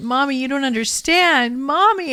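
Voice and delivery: put-on crying, near screaming. Retelling what they said to Mommy as a young child, acting out loud crying. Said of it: "I started crying really loud and almost screaming".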